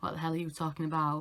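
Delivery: ordinary delivery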